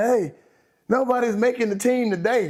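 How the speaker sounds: put-on dead-serious tone. Retelling what the coach told the team at practice: imitating Wade, so serious. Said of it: "so serious".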